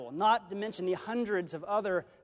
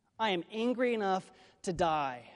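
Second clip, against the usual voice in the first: ordinary talk, nothing marked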